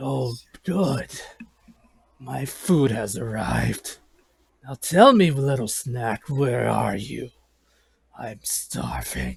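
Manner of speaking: lowest-possible, slow, swooping monster creature voice. Reading aloud a creature's lines that the text gives: the deepest voice possible. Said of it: "in the deepest voice possible".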